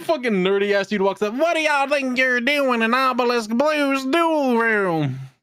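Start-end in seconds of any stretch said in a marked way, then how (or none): 1.3-5.0 thick put-on Southern accent, slow and high. Retelling what a nerdy character says on walking up: imitating a heavy Southern accent. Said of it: "the most heavy Southern accent".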